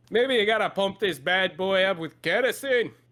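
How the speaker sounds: struggling put-on Scottish accent. Voicing a character who suggests pumping kerosene: scottish accent. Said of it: "having such a hard time doing a Scottish accent".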